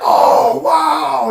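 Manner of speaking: put-on high, loud, amazed childlike exclamation.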